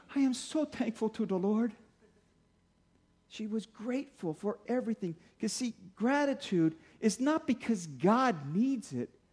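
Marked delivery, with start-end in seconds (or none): 0.1-1.7 put-on thick Danish accent. Quoting what grandma always said, imitating grandma's Danish accent. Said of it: "with this Danish accent, she goes".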